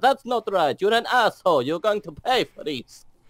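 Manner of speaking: put-on furious, heavy Italian accent. Retelling how an F1 driver answered his engineer, imitate Giancarlo's angry Italian voice. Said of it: "in his very Italian, uh, angry, angry Italian voice".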